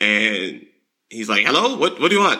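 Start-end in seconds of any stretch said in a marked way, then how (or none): 1.5-2.4 put-on rapid broken English, thick Chinese accent, fast and high. Retelling a call with a restaurant owner about a DoorDash order, heavy accent. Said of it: "Talking real fast, broken, English, heavy accent".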